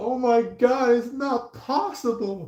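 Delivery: tearful crying voice, pitched way up. Acting out a person who cannot believe it: imitating someone crying. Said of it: "somebody that's, like, crying, going like".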